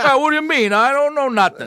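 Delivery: tough New York hoodlum voice. Imitating an actor who sounds like a new york hoodlum: new york hoodlum voice. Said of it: "He sounds like a New York hoodlum".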